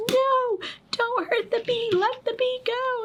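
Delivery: put-on shrill, high, drawn-out pleading shout. Retelling how you yelled at Wally out back, retelling a yell. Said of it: "And I'm like yelling at him".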